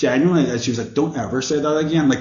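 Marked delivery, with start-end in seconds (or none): 0.9-2.1 put-on patronizing, talked-down tone. Retelling what a girl said after hearing a word: imitating a condescending tone. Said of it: "really condescendingly talking to me".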